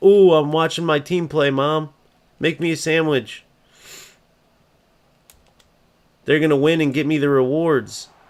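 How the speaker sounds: high, mocking caricature of a lazy couch gamer. Mocking players who let the ai play: mocking imitation of a lazy gamer. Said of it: "those losers just let A I play".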